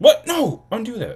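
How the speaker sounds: shrill, very loud, high-pitched full-volume yelling. Speaker breaks off mid-talk after doing something by accident, yelling. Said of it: "Sorry for the yelling".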